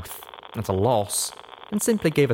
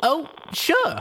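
cheery, bright, very high chirp. Reading a story aloud, a character answers the narrator's request, speaking brightly. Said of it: "she said brightly".

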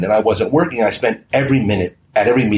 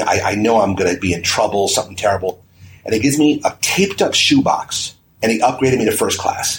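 normal talking voice

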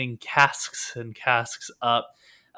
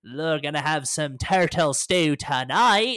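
scornful, contemptuous, jeering sneer; 3 semitones higher than usual. Narrating as the boat rows closer, a crew member sneers down, sneering. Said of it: "someone else sneers down".

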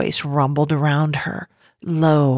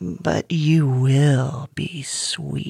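slick, greasy voice, drawn-out "will". Narrating the ground's reply to a trapped Janie, in a voice slick as grease. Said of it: "the ground mused with a voice slick as grease".

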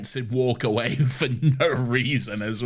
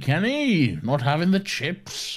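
exaggerated British schoolteacher voice, sing-song and slow; 5 semitones higher than usual. Retelling what the teacher says to kenny: imitating an exaggerated british teacher. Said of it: "he's not that British".

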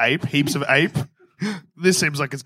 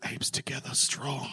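whispered, very quiet, barely voiced; 13 dB quieter than usual. Pretending to whisper to King Kong: whispering. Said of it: "I'm just going to whisper to King Kong".

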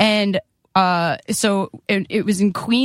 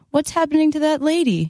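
put-on high, small four-year-old child voice; 7 semitones higher than usual. Retelling what a little kid asked in a theater: imitating a little kid. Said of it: "Like a really little kid, like a four-year-old".

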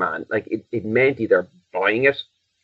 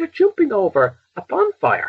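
put-on exasperation, much higher; 13 semitones higher than usual. Recounting a scene, the speaker retells a man's reaction: retelling an exasperated line. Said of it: "he said it somewhere in an exasperated tone".

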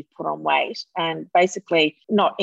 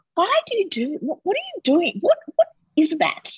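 put-on very high, swooping, fussing granny voice; 13 semitones higher than usual. Speaker retells questioning the kids they work with about their selfies, grandma-like voice. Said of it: "and I sound like a grandma".

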